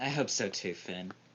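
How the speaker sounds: low, muttered mumble under the breath. A character replies to finn, mumbling under her breath. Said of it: "look down at the ground and mumble under her breath".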